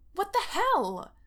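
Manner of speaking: very high, loud, startled, freaked-out yelp. She slams into Derek standing by her kitchen sink, freaked-out yelp. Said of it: "She yelps".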